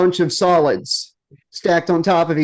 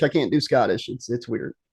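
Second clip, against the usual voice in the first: normal talking voice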